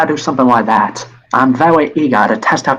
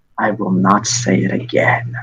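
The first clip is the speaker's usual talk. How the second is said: low, very ominous, menacing, foreboding voice; 5 semitones lower, 4 dB quieter than usual. Narrating a scene as frost forms, voicing her warning in a very ominous voice. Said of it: "you hear her say in a very ominous voice".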